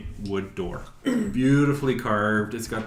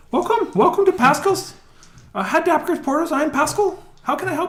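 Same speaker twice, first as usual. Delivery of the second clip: put-on shrill dwarf voice, much higher, louder; 4 dB louder than usual. Narrating a well-dressed dwarf greeting a visitor to his portal shop, shrill Pascal dwarf voice. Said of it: "He says in a shrill voice".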